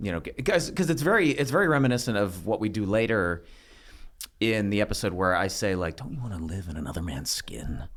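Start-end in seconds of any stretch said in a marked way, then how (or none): 6.0-7.8 creepy, intense, very low, deep-voiced murmur. Retelling own creepy line from an episode: imitating own very low, intense voice. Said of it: "a very low voice, and, like, very intense".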